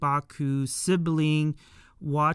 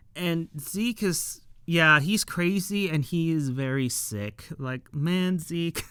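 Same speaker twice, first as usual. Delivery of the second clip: normal talking voice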